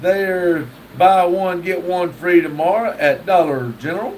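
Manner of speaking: usual speaking voice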